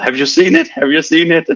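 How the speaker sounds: put-on eager, excited high yell, blurted and rattled off. Retelling a PhD student running into the lunch room: retelling an excited yell. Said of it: "he just yelled".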